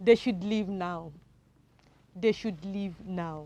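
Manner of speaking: falling tone on "leave now", dropping through "now". Teacher reading an example sentence aloud for learners: falling intonation. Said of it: "Did my voice go up? No".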